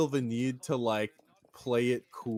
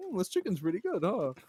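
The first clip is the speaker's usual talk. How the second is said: studied put-on nonchalance, casual and chill, pitched up; 7 semitones higher, 3 dB quieter than usual. Imitating a person caught lying who plays it cool: imitating someone acting calm. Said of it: "so I'm gonna be so calm and be like".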